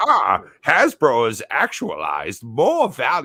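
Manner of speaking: put-on old-timey English gentleman voice, swooping pitch. Voicing a line from a YouTube transcript in an old 1920s Englishman voice. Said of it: "an old nineteen twenties Englishman voice".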